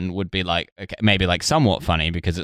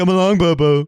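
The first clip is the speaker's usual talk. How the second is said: very high, loud cartoon voice, called out; 10 semitones higher, 6 dB louder than usual. Trying a Yogi voice that comes out as Top Cat voice. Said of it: "what I'm doing there is Top Cat".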